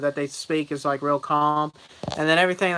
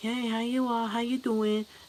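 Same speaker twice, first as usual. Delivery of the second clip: put-on, pitched-up Chinese accent in English; 7 semitones higher, 7 dB quieter than usual. Imitating a chinese man greeting someone: mock chinese accent. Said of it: "Chinese is all like".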